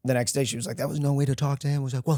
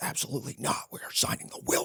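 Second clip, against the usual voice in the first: put-on sudden breathy whispered snap, hushed; 8 dB quieter than usual. Retelling what he said on the drive home: imitating a snapping man. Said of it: "he, like, snapped".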